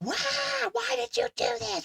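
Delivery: very high-pitched panicked voice. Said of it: "he's got that high-pitched voice".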